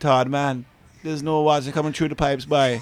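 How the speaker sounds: put-on Guyanese accent. Recalling a man coming down the stairs, in a hard Guyanese accent. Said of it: "with a hard Guyanese accent".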